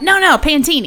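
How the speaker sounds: put-on New Jersey accent. Quoting a man ordering drinks, in the speaker's best Jersey accent. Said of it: "this is my best Jersey accent".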